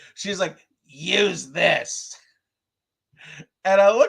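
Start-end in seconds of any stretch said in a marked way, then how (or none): 0.9-2.2 put-on raspy smoker voice. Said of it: "you've given her a smoker voice".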